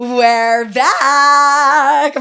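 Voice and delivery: voice breaking as it comes out, drawn-out end. Announcing that the conversation is back on: voice cracking. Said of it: "My voice just cracked".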